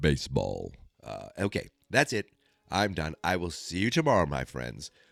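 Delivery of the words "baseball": very deep, low bass voice. Closing with a quick voice: James Earl Jones voice. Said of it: "my James Earl Jones voice of the day".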